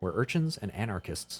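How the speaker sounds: ordinary delivery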